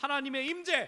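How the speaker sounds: loud, high, climactic preaching cry.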